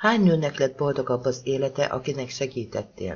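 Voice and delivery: ordinary delivery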